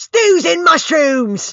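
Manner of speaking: loud, high, in-character yell. Waking up in character at the smell of soup: in-character yell. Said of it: "I'd like to bolt up and yell".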